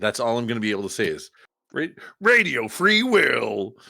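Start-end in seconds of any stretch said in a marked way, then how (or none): 1.7-3.7 squeaky, high, stretched voice. Joking about only saying own handle like a Pokemon: put-on Pokemon voice. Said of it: "Is that the Pokemon voice you're going with?".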